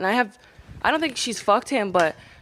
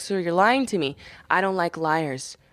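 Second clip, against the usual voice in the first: acted low, slow, stern, very serious tone; 6 semitones lower than usual. Retelling how a client caught a lie: imitating a serious tone. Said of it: "So he got real serious".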